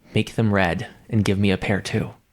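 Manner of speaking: private, confiding, just-between-us tone. Playing a character who quietly asks a friend for a favor: very quiet voice. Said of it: "just very quietly say".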